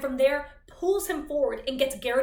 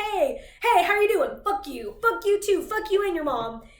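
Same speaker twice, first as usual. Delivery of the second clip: play-acted, high, taunting, jeering yells; 6 semitones higher, 4 dB louder than usual. Retelling boys in a crowd insulting people: imitating taunting yells. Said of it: "they're yelling at people's faces saying".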